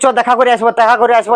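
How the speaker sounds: ordinary delivery, nothing marked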